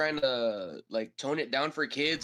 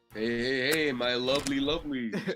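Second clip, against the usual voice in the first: smooth, flirtatious chef voice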